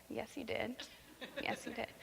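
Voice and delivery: put-on whisper, knowing, amused, gently teasing. Retelling the scene where Sarah denies laughing, imitating God with a smirk. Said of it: "you sort of hear the smirk in God's voice".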